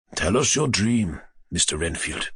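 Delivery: hushed, solemn, quiet, grave, low tone. Narrator reads a doctor's line to an injured man, in a quiet, grave tone. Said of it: "said in a quiet, grave tone".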